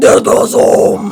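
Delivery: put-on heavy metal voice. Asked to say deathgasm in a metal voice: put-on metal voice. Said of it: "say Deathgasm in your metal voice?".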